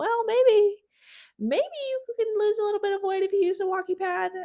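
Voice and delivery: tiny, high little voice. Voicing a tiny pea part of their brain, in a tiny pea voice. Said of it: "I felt like I had to talk in a pea voice for that".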